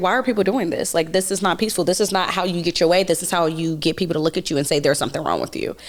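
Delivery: ordinary delivery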